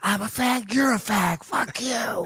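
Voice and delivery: heated half-whisper, under the breath. Retelling own past words while gaming: imitating own half-whispered arguing. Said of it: "That's me whisper arguing".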